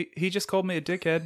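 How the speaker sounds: soft, sleepy, high-pitched mumble. Chatting about the comedic relief character in Thor, do a sleepy Korg impression. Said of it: "That's a good impression".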